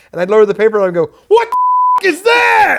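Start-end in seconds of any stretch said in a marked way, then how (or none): 1.3-2.8 mock freaked-out voice, very high and swooping. Retelling a scene line, lowering the newspaper: imitating acting freaked out. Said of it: "try to act as freaked out as I could".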